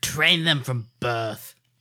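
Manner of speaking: chilling, disturbing put-on military general's voice. Answering how to get new loyal First Order kids: good Hux impression. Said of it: "That was a really good Hux impression".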